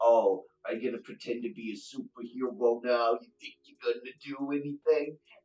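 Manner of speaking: very loud, mocking, jeering thug voice. Voicing a thug lifting a knife to stab a player: thug taunting before a stab. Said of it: "And he goes".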